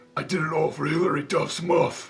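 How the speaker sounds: put-on anime villain voice. Trying out a Dragon Ball Z impression for the others: Vegeta impression. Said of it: "I tried doing Vegeta".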